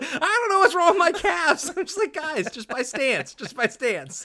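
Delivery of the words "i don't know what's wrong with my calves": very loud, high-pitched, complaining yell. At lunch, retelling what Adam was yelling, imitating Adam yelling. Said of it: "I got Adam over here yelling".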